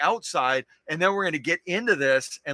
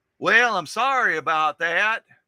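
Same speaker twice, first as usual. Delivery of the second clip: botched, bad put-on Texas accent; 3 semitones higher, 4 dB louder than usual. Imitating the seller from Texas apologizing: bad Texas accent imitation. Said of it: "It's probably not a Texas accent".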